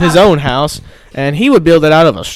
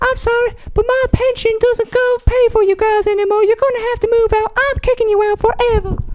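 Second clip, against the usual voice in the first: fake feminine voice, pitched way up; 3 dB quieter than usual. In a three little pigs skit, playing the pigs' mom in a put-on feminine voice. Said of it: "as you can tell from my feminine voice".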